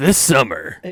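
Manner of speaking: booming, very loud movie-trailer announcer voice. Asked by a friend for his best trailer voice, movie-trailer voice. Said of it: "Let me hear your guys' best fucking trailer voice".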